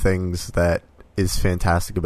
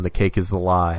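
ordinary talk, nothing marked

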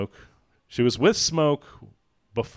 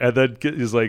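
plain

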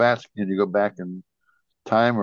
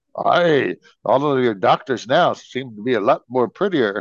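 put-on Scottish accent, in character; 3 semitones higher, 4 dB louder than usual. Retelling Mr. Scott's line in sick bay aboard the Enterprise, Mr. Scott's Scottish accent. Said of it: "when his Scottish accent".

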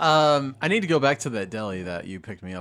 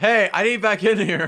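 shouted out, very high; 10 semitones higher, 6 dB louder than usual. In a tabletop game, a player's character yells through the open door. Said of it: "Just yell it out".

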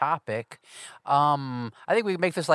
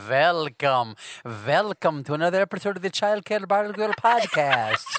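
put-on vampire voice. Introducing the podcast episode a second time, in a Dracula voice. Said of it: "that was actually pretty good".

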